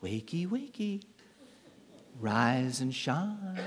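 soft, gentle, slow, drawn-out half-whisper. Retelling how an angel wakes Peter in prison: imitating a gentle half-whisper. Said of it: "he gently whispers to Peter".

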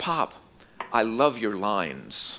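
put-on loving, tender voice, very slow. Retelling what a grandchild said while being held: imitating Titus speaking lovingly. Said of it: "he says to me very lovingly, very tenderly".

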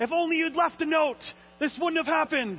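very high, shrill, loud fatherly yelling. Telling a story, the speaker voices the father yelling at the kids: retelling the father's yell. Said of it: "the father is yelling".

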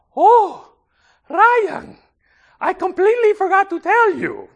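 put-on accent from the Dominican Republic. Retelling the phone call his mother made to him: thick Dominican accent. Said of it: "my mother calls me in a thick Dominican accent and says".

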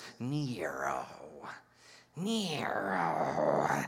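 very low, soft, sneering voice. Showing the kids how to say the ruler's name: sneering. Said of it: "you have to say it with a sneer".

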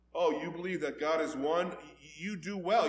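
performed sarcastic tone. Explaining a scripture passage, quoting the writer's reply to believers, retelling a sarcastic remark. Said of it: "James sarcastically says".

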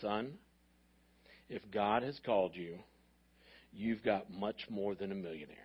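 very low, soft, deep baritone voice. Quoting Dr. Rogers's reply to the speaker, in Dr. Rogers's deep baritone voice. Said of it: "in his deep baritone voice says".

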